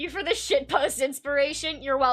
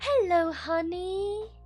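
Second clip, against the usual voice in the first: overdone upper-crust posh accent, pitched up; 5 semitones higher than usual. Trying out a voice for a greeting, in a too posh accent. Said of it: "that's too posh".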